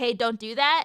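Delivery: put-on quiet upset tone. Showing how they sound when truly upset: imitating own quiet upset tone. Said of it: "I usually go quiet".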